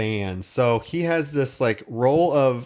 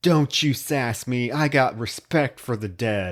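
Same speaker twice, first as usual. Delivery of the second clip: slow, snapping, mock sheriff voice. Retelling a film scene where the sheriff scolds: imitating someone snapping. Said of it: "the sheriff snaps at Pepper".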